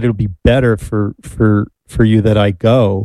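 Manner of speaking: ordinary delivery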